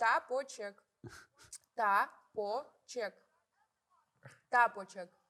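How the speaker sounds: speaking with mouth stuffed full. Playing a stuffed-mouth word game, repeating the word: mouth stuffed full. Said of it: "а чё ты ей одну засунул?".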